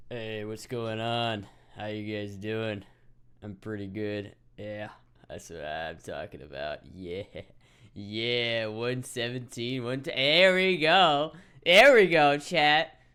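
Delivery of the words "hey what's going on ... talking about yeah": deliberately forced, lowered voice. Testing a pitch reading for chat: deliberately lowered voice. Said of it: "let me try to make it low".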